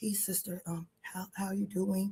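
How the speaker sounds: very quiet, soft, timid, meek voice without bass. Imitating men greeting the speaker at hosted events: imitating a meek voice without bass. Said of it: "speak with the bass in your voice".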